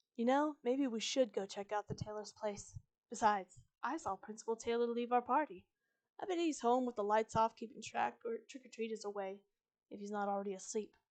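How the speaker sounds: ordinary delivery, nothing marked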